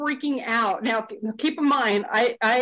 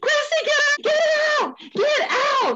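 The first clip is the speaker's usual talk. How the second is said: play-acted, very high, frantic panicked voice; 3 dB louder than usual. Retelling urging the woman in the video to leave, re-enacting freaking out. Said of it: "And I'm freaking out".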